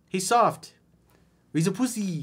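put-on, feminine, high Brazilian accent. Voicing what a woman's text basically said to a man, Brazilian feminine accent. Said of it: "In my Brazilian feminine accent".

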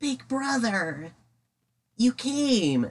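put-on very high, sad child voice, slow, "came" stretched out. Retelling a scene where a chained-up brother is found: Mokuba voice. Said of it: "that was a pretty good Mokuba".

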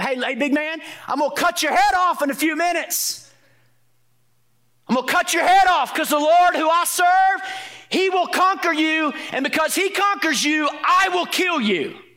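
play-acted very high-pitched, jeering, taunting jab. Acting out David giving Goliath a jab before the fight: David's taunting jab. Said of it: "let me give you a little jab".

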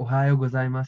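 usual speaking voice

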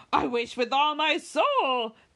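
crying out, slow, high, soulfully drawn out. Sir John cries out to the others present. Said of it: "cried Sir John".

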